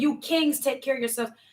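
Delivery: ordinary talk, nothing marked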